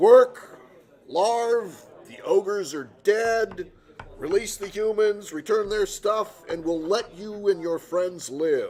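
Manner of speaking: very loud, high, booming voice. A player's character Taman magically amplifies his voice toward the goblins, loud, booming voice. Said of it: "I thaumaturge in a loud, booming voice".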